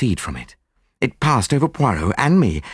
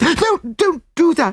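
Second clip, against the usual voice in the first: gasping, very high, frightened and pleading. A woman reacts as a man locks the door, gasped. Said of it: "she gasped".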